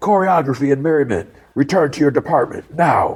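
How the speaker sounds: high, called-out yell. Retelling a scene where an order is given: imitating someone yelling. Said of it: "He yells out".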